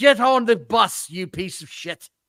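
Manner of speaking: put-on English accent. Acting out what Nick Aldis told someone: Nick Aldis impression. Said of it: "I can't do a great English accent sometimes".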